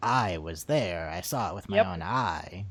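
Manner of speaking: forceful put-on military voice. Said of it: "The way she talks is just the best. She's so intense".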